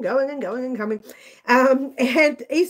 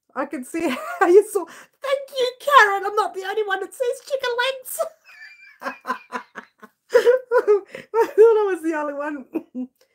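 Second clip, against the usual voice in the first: laughing while talking, higher pitch; 8 semitones higher than usual. Thanking a viewer who also sees chicken legs, laughing while talking. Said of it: "I've got tears in my eyes".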